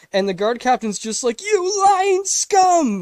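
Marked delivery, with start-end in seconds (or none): 1.5-3.1 put-on, super loud, shrill, all-out high yell. Retelling the guard captain's reply to being called the traitor, retelling a super loud shout. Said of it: "Like super loud".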